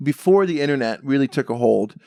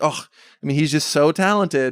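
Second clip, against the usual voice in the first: ordinary talk, nothing marked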